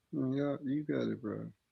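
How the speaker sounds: very quiet, slow, downcast and defeated. Replying to another speaker during an argument: depressed and defeated. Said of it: "Why you sound like that?".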